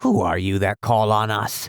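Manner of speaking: rough, gruff, demanding, challenging tone. Narrator voices one of the band of Canucks confronting the newcomer, gruff voice. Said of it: "demanded one in a gruff voice".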